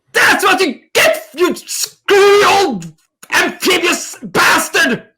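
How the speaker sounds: very high, shrill, furious yell in a woman's voice. In a game scene, a woman yells after a vase smashes into the wall, angry woman's voice. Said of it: "Angry woman".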